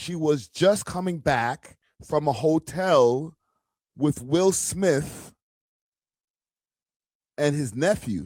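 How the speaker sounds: slow, deliberate, careful word-by-word reading aloud. Reading a breaking story aloud to the others, reading slowly. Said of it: "I have to read it slow".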